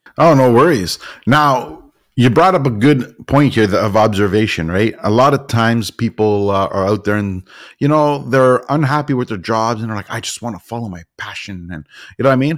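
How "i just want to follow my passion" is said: put-on derisive mutter, very quiet, hushed and low. Speaker quoting people unhappy with their jobs, mocking people's complaints. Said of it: "the reason I'm mocking it".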